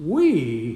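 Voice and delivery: heavy emphasis on the word "we". Quoting what certain people go around saying, stress on "we". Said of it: "Emphasis on we".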